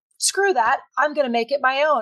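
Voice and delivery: ordinary talk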